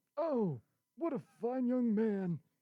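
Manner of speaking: put-on high, loud, cranky grumpy old man voice. Playing Grandpa in a radio show bit, old man impression. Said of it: "my old man impression".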